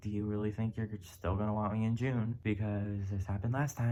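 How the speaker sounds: ordinary talk, nothing marked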